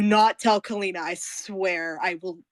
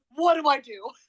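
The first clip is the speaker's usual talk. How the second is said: utterly confused, bewildered, slower; 8 semitones higher than usual. A character looks over at a companion, utterly confused. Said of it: "in utter confusion".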